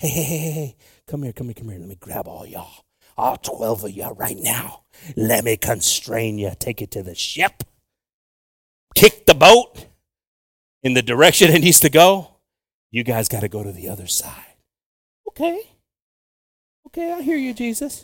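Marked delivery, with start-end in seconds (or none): 0.0-14.3 put-on aggressive voice. Retelling the gospel story about crossing to the other side, acting as aggressive Jesus. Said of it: "Jesus needs to be aggressive".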